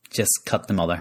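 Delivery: normal talking voice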